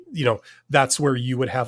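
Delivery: ordinary delivery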